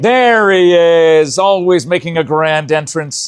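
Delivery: loud, high, excited hype-man announcer voice.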